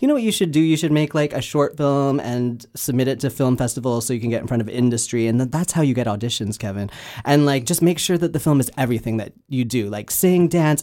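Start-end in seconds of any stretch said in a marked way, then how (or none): none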